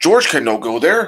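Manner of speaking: clumsy ape-man talk. Mocking a movie role while reviewing it, in a Brendan Fraser ape-man voice. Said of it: "he's talking like that".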